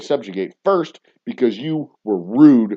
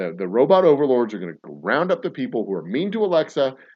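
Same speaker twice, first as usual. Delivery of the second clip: ordinary delivery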